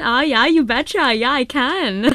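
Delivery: Minnesotan accent. Radio show guest, asked to do a Minnesotan accent: Minnesotan accent. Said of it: "Can you do a Minnesotan accent?".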